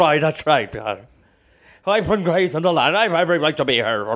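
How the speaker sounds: put-on horse voice with an Irish accent. Playing a horse defending itself in court, in an Irish horse voice. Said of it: "Why does he sound like that?".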